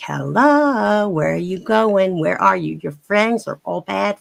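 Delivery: New York accent throughout, "hello" stretched out. Showing off the accents they can do, in a New York accent. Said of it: "That's more New York".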